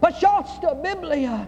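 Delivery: high-pitched weeping cry. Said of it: "Weeping, she cried out".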